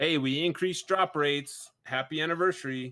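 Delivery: ordinary delivery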